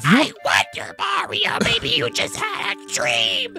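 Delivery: put-on whispery, breathy, young little witch voice. Playing a Mario game, speaker reads a line to Mario: Toad voice like Gruntilda's sister. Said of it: "Sound like Gruntilda's like younger sister".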